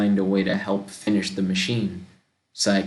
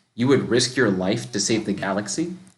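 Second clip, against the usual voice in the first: plain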